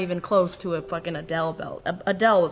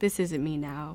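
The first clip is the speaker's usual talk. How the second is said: ordinary talk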